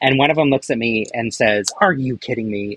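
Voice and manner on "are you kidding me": mock dismissive, rude tone. Retelling an engineer's reaction to a costume: imitating a dismissive, rude remark. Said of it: "in, like, a really dismissive and rude way".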